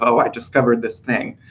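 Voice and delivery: normal talking voice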